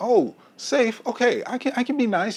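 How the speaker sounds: very high, slow put-on nice-guy voice. Acting out a guy told a woman wants safe, high-pitched nice-guy voice. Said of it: "You hear it in my voice even".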